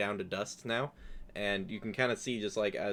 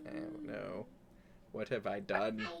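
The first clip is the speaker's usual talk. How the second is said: put-on regretful, remorseful old nobleman voice; 7 dB quieter than usual. After a pun, voicing a made-up character: regretful old noble voice. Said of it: "that's an old noble who regrets his choices".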